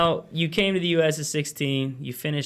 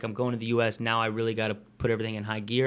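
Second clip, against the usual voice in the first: normal talking voice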